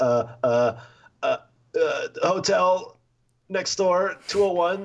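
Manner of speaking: very high, very slow, rising, nervous faltering stutter. Retelling freezing up while asking a bartender over: imitating own nervous stammer. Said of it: "I sounded like an introvert trying to talk".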